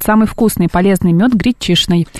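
ordinary delivery

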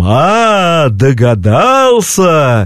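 evil spirit's wailing, howling tone with drawn-out "a". Acting out the evil spirit's line as it guesses, in a howling tone. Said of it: "нечистая сила говорит таким завывающим тоном".

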